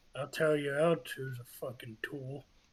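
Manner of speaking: very quiet whisper. A player character whispers to a companion at an inn, very quiet whisper. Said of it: "I'm just gonna very quietly whisper".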